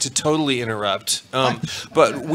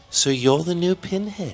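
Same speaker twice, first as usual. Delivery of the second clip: creepy put-on voice; 3 semitones higher than usual. Asked to repeat the impression, quoting a line to a new actor: Clive Barker impression. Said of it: "will you do your Clive Barker one more time".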